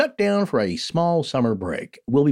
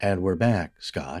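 smooth, soothing put-on ai voice, lower and quieter; 7 semitones lower, 4 dB quieter than usual. Greeting the co-host on returning to the show: comforting ai voice. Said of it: "Is that your comforting A I voice?".

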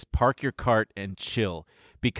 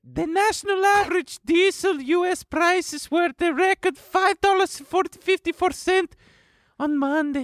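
put-on Russian accent. Reading a news article aloud in a mock russian accent. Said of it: "That doesn't sound Russian".

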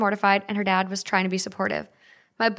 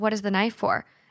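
usual speaking voice

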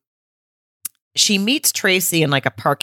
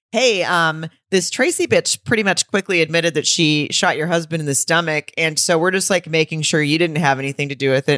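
ordinary delivery

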